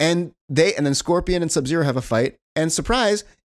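ordinary delivery

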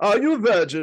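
hammed-up put-on German accent. Quoting a line a man says constantly, with a German accent. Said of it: "with the German accent too".

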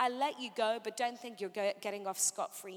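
plain

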